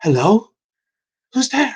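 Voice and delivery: very high-pitched feminine woman's voice. Game master voicing whoever answers the door the player knocked on, in a feminine voice. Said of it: "you then hear a feminine voice like".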